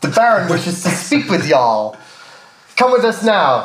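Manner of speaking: vague, loose American drawl on y'all. Voicing a man who tells the group the Baron wants them, kind of American accent. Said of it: "It's kind of American".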